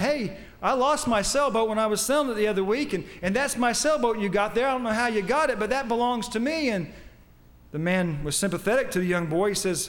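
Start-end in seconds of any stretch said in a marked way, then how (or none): none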